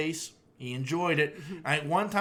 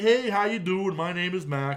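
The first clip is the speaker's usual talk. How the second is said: put-on dog voice; 2 semitones higher than usual. Retelling how the visiting dog greeted everyone: voicing Mac the dog. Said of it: "and Mac is just like".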